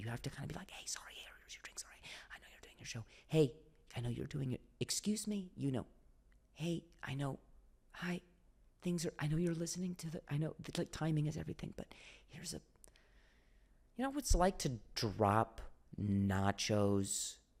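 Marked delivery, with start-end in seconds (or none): 0.7-12.6 put-on quiet voice, higher and quieter. Retelling serving drinks during a comedy show: imitating a quiet voice. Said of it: "you can't actually be that loud".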